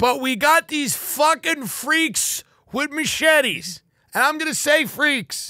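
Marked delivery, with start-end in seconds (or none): 0.0-3.8 mock angry, worked-up, fed-up rant. Imagining addressing the people of Malibu about their special town, angry. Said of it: "I'm mad. I'm angry".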